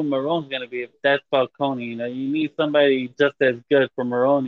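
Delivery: ordinary delivery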